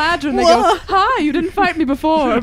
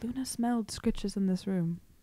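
quiet, much lower pitch; 8 semitones lower, 16 dB quieter than usual. Speaking in character, saying the line kind of quietly. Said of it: "I say kind of quietly".

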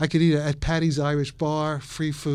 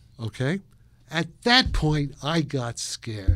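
plain

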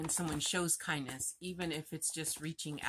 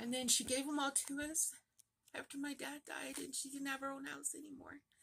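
very high, soft, tearful crying through the words; 11 semitones higher, 5 dB quieter than usual. Explaining why a gift made them cry, while crying. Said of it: "why I'm crying".

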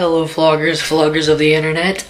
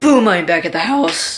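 voice cracking and breaking on house; 2 semitones higher than usual. A vlogger tells his viewers he is back at the house, voice cracking. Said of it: "Voice crack".

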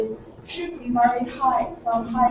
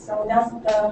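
normal talking voice

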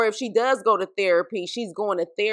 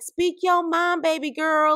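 mock condescending, patronizing, pitched-up tone; 8 semitones higher than usual. Retelling a reality-show argument, imitating Jackie's condescending tone. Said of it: "trying to be condescending".

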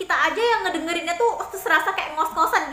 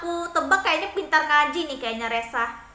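ordinary delivery

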